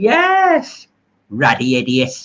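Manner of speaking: put-on sing-song Chinese accent, swooping pitch, stretched yes. Recalling an old comedy interview sketch, Benny Hill mock Chinese accent. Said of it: "he used to take that China fella off".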